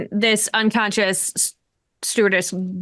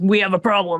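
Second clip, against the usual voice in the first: put-on deep husky voice; 2 semitones lower than usual. Retelling what another player said during the game: Jason Statham voice. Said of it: "in a real deep sort of husky voice".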